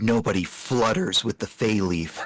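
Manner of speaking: menacing, threatening whisper. Leaning in over a pinned opponent in a grapple: whispering a threat. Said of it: "lean in and whisper".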